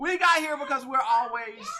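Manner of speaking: shouting. Explaining how the conversation got to this point: yelling. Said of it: "sorry for yelling".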